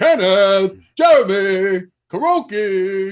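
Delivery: goofy put-on voice, high and very loud. Copying how the other speaker just read out names: imitating a funny voice. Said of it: "can I just do what you just do".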